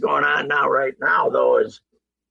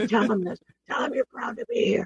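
soft, high whisper under the breath; 7 semitones higher, 7 dB quieter than usual. Retelling a leaked audio clip of the general manager: imitating Spielman whispering. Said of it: "Whispering to Jeff".

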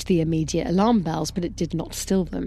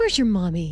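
doting, tender cooing voice. Reading a story aloud, a man speaking to a child: cooing. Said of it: "he cooed".

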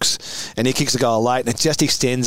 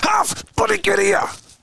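piercing, very high, hoarse, rough, drawn-out yell. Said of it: "he yelled again".

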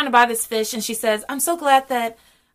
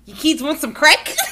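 quick, put-on Australian accent; 4 semitones higher, 4 dB louder than usual. Redoing a line from an episode on request, in an Australian accent. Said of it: "Should I do it in an Australian accent?".

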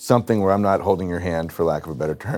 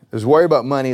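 "worry about money" said loud and higher. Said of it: "there's two worries about money".

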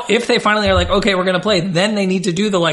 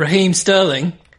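put-on British accent, played for laughs. Asked to say a player's name funnier: British accent. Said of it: "Like in a British accent?".

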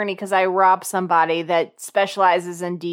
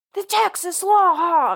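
slow, high, drawn-out commercial announcer yell; 11 semitones higher than usual. Retelling a flaming motorcycle commercial, imitating a commercial guy yelling.

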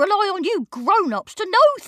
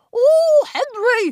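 put-on disappointed voice, much higher in pitch; 11 semitones higher, 5 dB louder than usual. Retelling what Miss Battleaxe said to Henry: imitating Miss Battleaxe, disappointed. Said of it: "in her disappointed voice".

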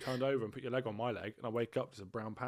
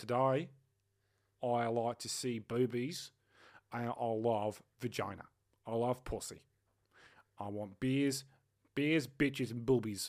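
put-on Australian accent. Asked to do the accent, speaking in a put-on Australian accent. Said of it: "You sound like someone off of Married at First Sight Australia".

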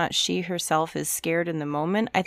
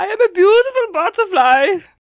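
very high-pitched, very loud belted voice; 11 dB louder than usual. Quoting a cartoon butterfly after hearing another voice: butterfly from A Bug's Life voice. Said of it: "the butterfly from, uh, A Bug's Life".

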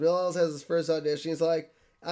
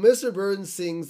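ordinary delivery

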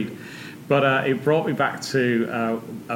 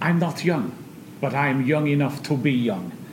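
put-on pronounced lisp; 3 semitones higher than usual. Quoting a memorable Eubank line: Eubank impression with lisp. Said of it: "he had a quite a pronounced lisp, so I'll attempt that as well".

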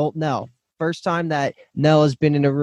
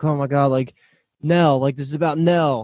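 put-on frantic voice. Retelling a show scene where a dad calls his son: imitating someone frantic. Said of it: "in a frantic state saying".

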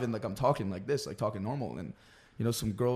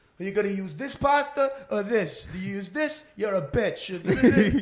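loud, slow, put-on New York accent, bellowing; 9 semitones higher, 6 dB louder than usual. Retelling a line screamed in a cooking video: own screaming in fake New Yorker accent. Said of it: "it was me screaming".

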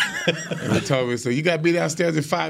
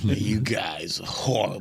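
put-on sneering voice, lower; 6 semitones lower, 3 dB quieter than usual. Retelling how a team boss sneered at the players: imitating Tex Schramm sneering. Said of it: "just sneering at us like".

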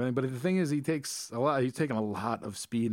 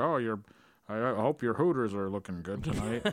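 put-on old-fashioned, quaint, old-timey gentleman's voice. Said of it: "he said it in, like, an old-timey way".

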